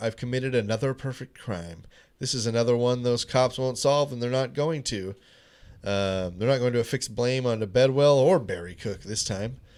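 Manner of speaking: usual speaking voice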